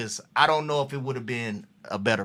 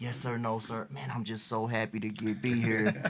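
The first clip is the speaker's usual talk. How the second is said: put-on humble voice, quieter; 6 dB quieter than usual. Retelling what a rookie said at training camp: imitating Gerald being humble. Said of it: "Gerald is humble, real humble".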